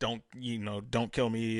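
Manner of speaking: put-on pleading, imploring, begging tone. Retelling a scene where a man on the floor begs: imitating someone pleading. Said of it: "the whole time the guy is just pleading".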